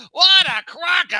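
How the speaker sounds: shouted delivery. Retelling a brother's outburst in the middle of a theater: imitating someone shouting. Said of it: "as loud as you can be".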